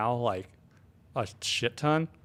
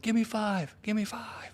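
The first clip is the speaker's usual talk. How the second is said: mild mock yelling, pitched high.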